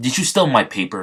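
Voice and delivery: ordinary delivery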